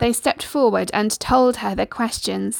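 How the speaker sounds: ordinary delivery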